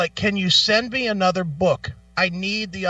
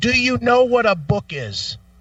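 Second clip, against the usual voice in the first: fed-up, pointed, annoyed, irritated delivery; 4 semitones higher than usual. Retelling a phone call to a support agent: retelling an annoyed question. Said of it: "that's when I got annoyed".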